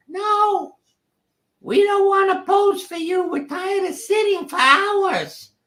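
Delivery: shrill, very high-pitched, loud voice. Retelling how the unhappy pets and kids answered from the house: high-pitched voice. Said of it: "I heard this high pitched voice".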